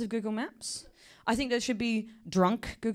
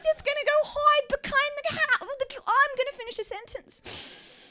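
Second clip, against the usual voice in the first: put-on New York accent, pitched higher; 3 dB louder than usual. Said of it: "that is how my dog sounds".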